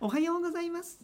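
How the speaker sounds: high cute moe voice with rising end. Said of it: "どんな感じの声ですか".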